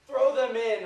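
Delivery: very loud, high, shrill, enraged, furious scream. Acting out a scene, imagining the king screaming at the soldiers: acting out a furious king screaming. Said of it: "he's screaming".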